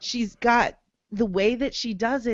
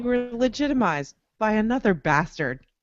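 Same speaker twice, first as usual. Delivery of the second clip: usual speaking voice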